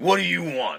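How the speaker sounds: irritated, gruff, angry barking man's voice. Acting out a gruff, angry-looking gentleman answering the door: gruff angry man. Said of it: "a rather gruff, angry-looking gentleman answers the door".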